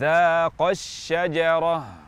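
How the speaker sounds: dzaqa stressed, rest said plainly. Reading Arabic with nabr on a word with dual alif: accent on dzaqa. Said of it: "kita baca dengan nabr di kata dzaqa yang ada alif tasniyahnya".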